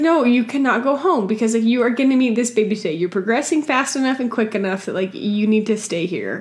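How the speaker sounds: normal talking voice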